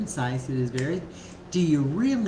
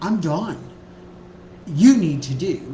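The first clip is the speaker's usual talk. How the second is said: loud, exasperated, fed-up angry outburst; 6 dB louder than usual. Demonstrating the wrong way to tell him you're overwhelmed: frustrated and angry. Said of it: "frustrated, angry because I'm overwhelmed".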